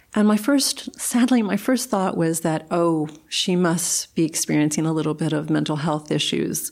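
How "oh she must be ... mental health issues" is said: normal talking voice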